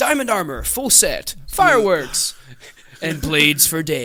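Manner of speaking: booming, drawn-out, slow and huge delivery.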